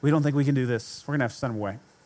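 discreet, quiet, hushed aside. Retelling a disciple quietly telling Jesus the plan: imitating a quiet aside. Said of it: "he's trying to tell him a little quiet".

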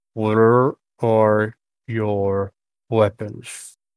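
wet, garbled creature voice. Voicing a character who speaks poor Common, in a wet-sounding voice. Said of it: "in a wet kind of sound, ... not the best common".

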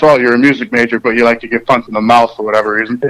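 plain

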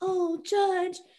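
put-on high-pitched Southern belle accent. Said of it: "I don't know why I suddenly have a Southern accent".

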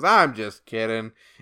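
ordinary talk, nothing marked

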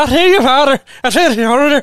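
voice that sounds Irish. Voicing the kid in a scene, the speaker repeats the line in an Irish-sounding accent. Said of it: "it sounds Irish".

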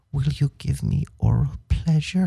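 soft, hushed, intimate whisper. Retelling a film line the character says in bed: imitating a whisper. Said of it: "she whispers to him and she goes".

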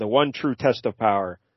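ordinary delivery

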